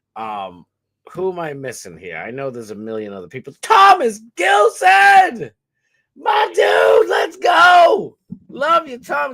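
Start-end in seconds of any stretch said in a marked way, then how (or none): 3.6-9.4 very loud, high, shrill, drawn-out scream. Greeting someone who just joined the stream: screaming. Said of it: "I know I'm screaming bloody murder".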